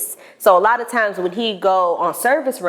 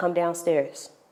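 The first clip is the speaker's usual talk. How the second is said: put-on calm old man voice, much quieter; 9 dB quieter than usual. Speaker retelling grandfather calling them downstairs, imitating calm grandfather. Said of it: "He's always calm".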